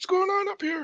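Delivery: very high, strained, straining voice. In a role-playing game, a player speaks as their character in a constipated-sounding voice. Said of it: "He sounds very constipated".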